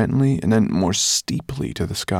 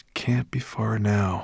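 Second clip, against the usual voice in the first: slow, soft murmur under the breath; 5 dB quieter than usual. Ben, looking across to the dragon-shaped mountains, murmured. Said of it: "he murmured".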